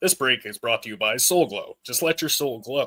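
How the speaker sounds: radio commercial announcer voice. Speaker announcing a sponsor break to everyone, commercial announcer voice. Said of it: "Let me get my best commercial voice here".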